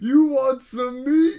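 very loud, shrill, high-pitched hollering. Speaker retelling a man offering leftover meat to strangers, retelling a yell across the park. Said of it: "He's yelling it across the park".

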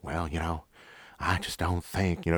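hedging, drawling southern way of talking. Imitating how a man talked while shaking his head. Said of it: "he talked just like this".

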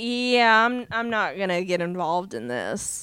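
mock fed-up, done-with-it, very drawn-out slow delivery. Retelling a character's reaction to a conversation: imitating someone fed up. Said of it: "She's so done with the whole conversation".

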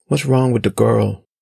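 plain

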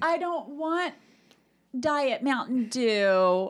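very whiny put-on whine, one word drawn out. Performing a deliberately whiny line for the other speaker, whiny. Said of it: "Was that whiny enough?".

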